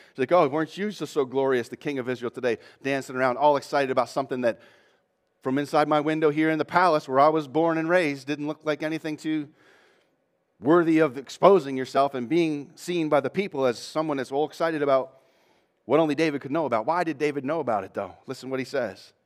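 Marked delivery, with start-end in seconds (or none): none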